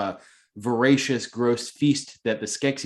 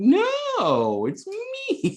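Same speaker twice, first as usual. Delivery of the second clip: very high, shady swooping voice, "no" drawn out and up. Retelling how the exiled character approaches the Gelflings: shady Chamberlain impression. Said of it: "approaching them as the shadiest fucker in this land".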